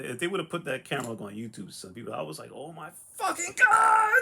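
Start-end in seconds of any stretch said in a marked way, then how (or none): 2.5-4.2 very high, swooping, stretched-out, drawn-out shriek. Retelling the moment they found the book they wanted, imitating their own screaming. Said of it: "I'm screaming".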